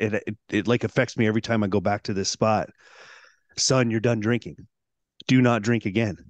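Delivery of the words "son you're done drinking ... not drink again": ordinary talk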